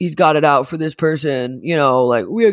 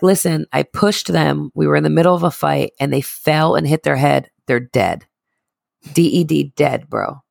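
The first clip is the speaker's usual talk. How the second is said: plain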